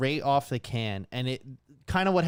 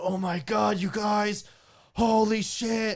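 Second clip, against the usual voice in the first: play-acted very slow, high, stretched-out screaming; 7 semitones higher than usual. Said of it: "that's when he starts screaming".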